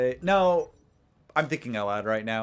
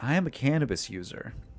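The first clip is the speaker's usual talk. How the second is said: hushed, confiding, soft half whisper. Retelling how she leaned in and spoke to him, retelling a whisper. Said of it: "she kind of whispers".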